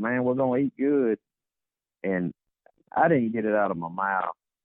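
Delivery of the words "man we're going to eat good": mock hollering call, voice pitched up high. Retelling calling back to other buddies after spotting a boar: retelling hollering to buddies. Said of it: "I hollered back at my other buddies".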